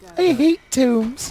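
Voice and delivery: very high put-on heroine voice. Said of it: "That's exactly what she sounds like".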